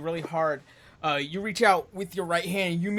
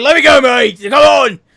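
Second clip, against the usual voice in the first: very loud, high, squirming, straining shout; 6 semitones higher, 17 dB louder than usual. Voicing a thief held in a bear hug, trying to wriggle out: voicing a thief struggling to break free. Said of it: "And he's currently trying to swing. He's like".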